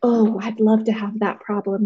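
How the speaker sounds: ordinary delivery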